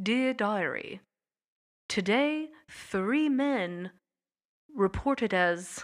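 clumsy, bad, fake British accent. Narrating a story, reading John Winthrop's diary aloud in a bad British accent. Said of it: "I can't do a British accent".

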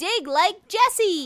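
enthusiastic, engaged delivery. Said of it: "You were getting into it".

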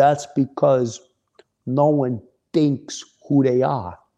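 strong put-on New Jersey accent. Retelling a conversation, the speaker quotes a man's reply in a thick jersey accent. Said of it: "with a very thick Jersey accent".

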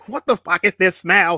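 loud, bad put-on voice with no finesse. Picking a movie, quoting Harper from The Best Man: imitating Harper. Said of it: "Was that your Harper impersonation?".

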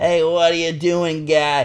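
put-on high, slow Boston accent.

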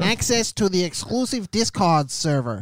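put-on, high, swooping, cartoonish character voice. Reading Patreon perks aloud in a made-up Xander's voice. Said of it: "I can't do that voice for too long".

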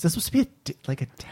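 soft whisper, under the breath. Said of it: "thank you for whispering it".

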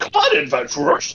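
raspy, rough, very high battle yell. Playing a character leaping out from nowhere at Murphy, yelling. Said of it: "I'm gonna yell".

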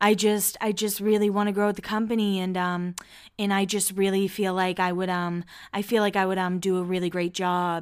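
deep, flat, droning monotone. Retelling how Heidi talks in serious conversations: imitating Heidi's deep monotone voice. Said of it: "the deeper voice, and it's very monotone".

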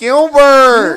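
very high, shrill, very loud calling out. Showing how Artie calls out in the movie: Artie impression shouting Gilbert. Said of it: "That's what he does".

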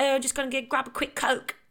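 bad fake British accent. Imitating all of the speaker's friends, terrible british accent impression. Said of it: "it's my terrible impression of all my friends".

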